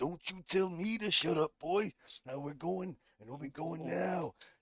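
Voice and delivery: loud, high-pitched yelling. Voicing a character yelling at creatures who shushed him: in character, shouting at the Kreen. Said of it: "As you begin shouting at the Kreen".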